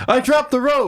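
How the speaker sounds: mock scared cry, very high-pitched and panicked. Retelling a scene where a scared character drops the rope. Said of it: "and he says".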